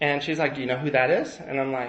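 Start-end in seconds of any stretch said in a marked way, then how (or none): 0.6-1.4 thrilled, eager, all worked up, excited. Retelling his mom spotting a man by a truck, imitating excited mom. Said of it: "my mom's all excited".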